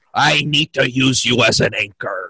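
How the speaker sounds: loud, hammed-up put-on pirate voice. Joking around with the others, slipping into a put-on pirate voice. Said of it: "I'm slipping into pirate".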